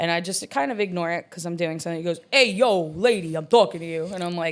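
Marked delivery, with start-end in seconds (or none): 2.3-4.0 put-on New York Long Island accent. Retelling a guy at the bar addressing the speaker, in a thick Long Island accent. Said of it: "that thick Long Island accent".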